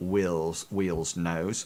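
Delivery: ordinary delivery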